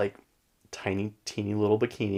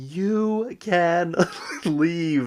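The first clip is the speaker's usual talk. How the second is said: high scream with "you" stretched long; 9 semitones higher than usual. Retelling a funny scene for friends, the speaker imitates a woman screaming. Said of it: "she just starts screaming".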